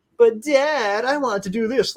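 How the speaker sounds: put-on very high, drawn-out, whiny child voice. Mocking how a kid in today's shows talks: imitating a whining kid. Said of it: "the kid would be, like, whining".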